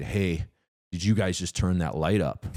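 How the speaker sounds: normal talking voice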